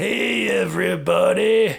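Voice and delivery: put-on loud, rough, high old-school rock and roll DJ voice. Mocking a commercial whose voiceover imitated a famous voice: Wolfman Jack impression. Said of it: "the guy who did the voiceover for the commercial was doing Wolfman Jack".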